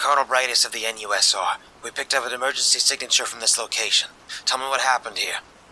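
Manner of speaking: authoritative tone. A colonel who just rescued the narrator demands answers in an authoritative commanding voice. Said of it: "She commanded in an authoritative voice".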